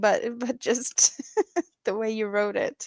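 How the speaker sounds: talking while laughing through the words. Reading a viewer's message aloud and reacting: laughing while talking. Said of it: "Sorry that I'm laughing".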